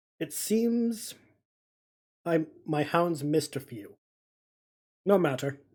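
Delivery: metallic voice, muffled as if behind a helmet visor. Voicing an armored man speaking through a helmet: metallic helmeted voice. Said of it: "through their helmeted voice, it's very, uh, metallic sounding".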